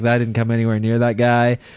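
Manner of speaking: ordinary talk, nothing marked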